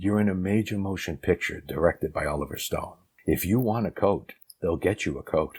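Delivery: confidential stage whisper, close and secretive. Retelling what a man half-whispered to the speaker: retelling a half-whisper. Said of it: "he pulls me in closer and he whispers".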